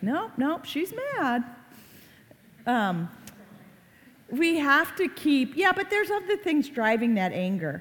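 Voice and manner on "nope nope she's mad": high, mocking kid voice. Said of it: "they're looking at me like I'm crazy".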